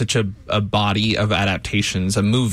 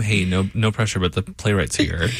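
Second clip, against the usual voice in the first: ordinary delivery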